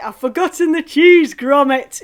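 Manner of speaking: talking through a yawn. Demonstrating a mouth exercise to viewers, through a sideways yawn. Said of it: "a big old yawn, as if it's pulling sideways".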